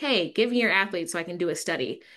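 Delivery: ordinary talk, nothing marked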